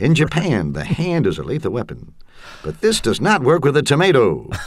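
commercial announcer voice. Recalling 70s and 80s TV pitchmen, quoting a knife ad: Ginsu commercial announcer voice. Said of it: "the generic voice of announcers".

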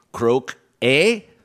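fake Canadian accent on croak-a, eh tacked on. Showing contestants how to answer a clue: put-on canadian accent. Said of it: "speak like a Canadian".

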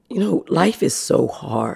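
soft, whispered, emotional speech.

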